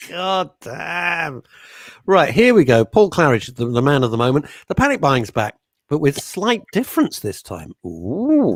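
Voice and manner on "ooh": curious, drawn-out, intrigued ooh. Host introducing a story about panic buying: intrigued ooh. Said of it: "That was my intrigued voice".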